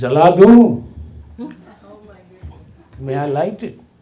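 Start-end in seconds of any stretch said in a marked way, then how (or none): 0.0-0.8 very loud, booming voice. Alone in a quadrangle when a big man spoke up, imitating a deep booming voice. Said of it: "there was this deep booming voice".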